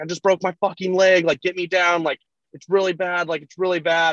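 frantic, high, panicked scream, totally losing it. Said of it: "screaming horribly".

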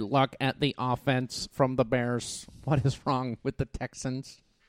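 slow, drawn-out, fake put-on alien voice. Joking about what an alien would say after the game: put-on alien voice. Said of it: "'Cause that's what aliens sound like".

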